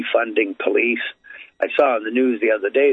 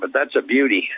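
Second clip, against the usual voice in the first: plainly sarcastic, mocking tone. Speaker criticizing a plan to send experts to violent calls, sarcastic. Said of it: "I'm being sarcastic here".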